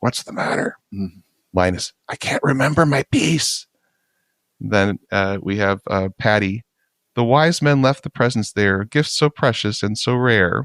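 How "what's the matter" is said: muttered out of the side of the mouth. Retelling a Christmas pageant, the speaker voices Lucy's line out of the side of her mouth. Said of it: "Lucy out of the side of her mouth".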